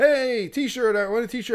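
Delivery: mock yelling. Speaker recalls yelling with a mask on, retelling a yell. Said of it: "I had my mask on and I yelled like".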